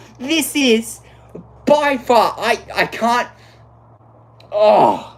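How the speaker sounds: very slow, winded, halting, breathless words. Race commentator after a one-point championship battle, out of breath. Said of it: "I need to catch my breath".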